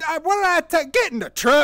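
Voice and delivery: loud, high, put-on rural Southern accent. Retelling a video where a redneck's rifle goes off, imitating southern redneck accent. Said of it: "it's so southern".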